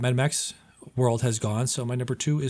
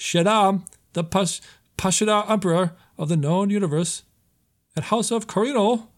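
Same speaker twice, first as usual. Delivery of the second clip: weak celebrity voice, pitched up higher; 8 semitones higher, 4 dB louder than usual. Listing cast of an upcoming movie: weak Christopher Walken impression. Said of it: "That's my weak-ass Christopher Walken impression".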